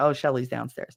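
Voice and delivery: normal talking voice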